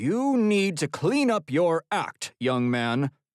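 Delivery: strict, stern. Narrator reads a frowning man's reply to the shrugging narrator, in a stern voice. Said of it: "in a stern voice says".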